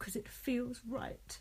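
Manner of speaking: slow, soft whisper. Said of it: "And Bianca said".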